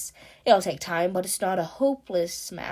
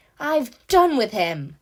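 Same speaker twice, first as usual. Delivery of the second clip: fierce, savage, loud and slow dismissive tone; 5 semitones higher, 6 dB louder than usual. Narrator reading the Rat's line about Toad, savage. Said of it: "said the Rat savagely".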